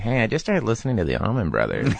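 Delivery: sing-song chatter, pitch swooping up and down. Retelling how Fred Armisen impersonates the speaker. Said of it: "Fred Armiste's impersonation of me is like".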